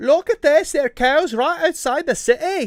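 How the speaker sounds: put-on high-pitched London British accent. Trying out a game character's line in Castrine's British accent. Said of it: "with the British accent".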